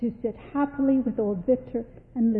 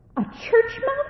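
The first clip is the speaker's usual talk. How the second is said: shrill shriek, pitched very high. A mouse mother hearing her son's wish to become a church mouse, shrieking. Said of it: "Shrieked his mother".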